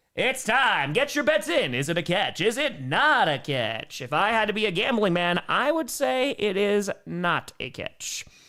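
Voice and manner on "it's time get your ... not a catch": put-on game show host announcer voice. Calling for bets on whether a play is a catch, game show host voice. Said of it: "Get out your game show voice".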